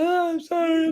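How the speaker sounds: very high, sobbing and bawling through tears. Retelling breaking down in his car as he turns down the stereo: imitating bawling. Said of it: "I start bawling".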